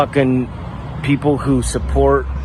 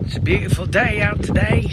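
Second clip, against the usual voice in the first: put-on British English accent, pitched up throughout; 8 semitones higher, 3 dB quieter than usual. In a clip, a man who prides himself on doing accents speaks in a British accent. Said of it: "he's doing a British accent".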